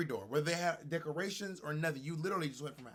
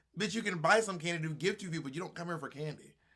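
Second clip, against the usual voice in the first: usual speaking voice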